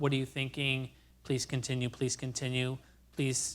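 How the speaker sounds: flat robotic delivery. Showing the minimal prompts used during a think-aloud, monotone robot-like prompts. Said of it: "almost like you're a robot".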